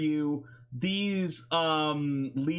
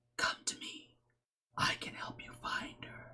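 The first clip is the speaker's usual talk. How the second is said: hushed, breathy whisper like an inner voice. A game master voices a voice heard in a player's head, whispering. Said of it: "you hear a whisper in your head".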